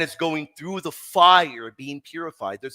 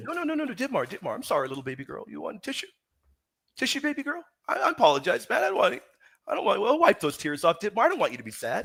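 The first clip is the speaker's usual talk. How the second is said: facetious, sing-song, sarcastic fake sympathy; 5 semitones higher, 5 dB quieter than usual. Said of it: "sarcasm, being facetious".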